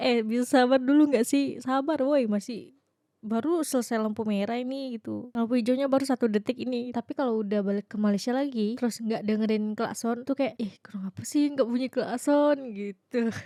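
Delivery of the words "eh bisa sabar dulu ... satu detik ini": ordinary delivery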